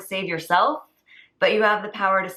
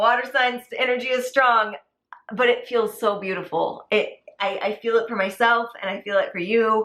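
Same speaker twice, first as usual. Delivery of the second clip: voice welling up with tears, close to crying; 2 semitones higher than usual. Finishing a reading for viewers, feeling it herself: tearing up. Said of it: "I'm tearing up".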